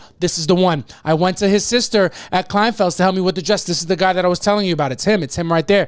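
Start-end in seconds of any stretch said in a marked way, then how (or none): none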